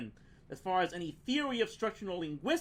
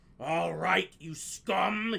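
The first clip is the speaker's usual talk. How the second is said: gruff, rough, threatening growl; 3 semitones lower than usual. Narrator reads number two advancing on Ford Prefect and Arthur Dent, growled. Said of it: "he growled".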